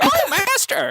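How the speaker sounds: very high-pitched calling-out voice. Joking about a costume, calling out from behind another player: Ravenous voice. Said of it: "I'll go as Ravenous".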